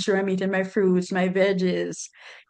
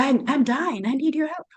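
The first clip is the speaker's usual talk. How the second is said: put-on out-of-breath gasping, higher pitch; 5 semitones higher than usual. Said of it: "she's panting like she's gonna drop".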